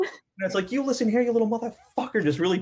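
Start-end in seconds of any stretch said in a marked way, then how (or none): 0.7-2.2 furious, fiery, pitched-up, pissed-off little voice. Voicing a tiny, pissed-off espresso shot mascot: put-on pissed-off espresso shot voice. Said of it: "really pissed off, fiery little espresso shot".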